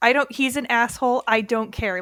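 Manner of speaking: ordinary delivery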